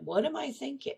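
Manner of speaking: kind, soft, inquisitive voice. Demonstrating the practice question you ask yourself, gentle, kind, curious tone. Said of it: "notice the tone of that statement. It's gentle. It's kind. It's curious".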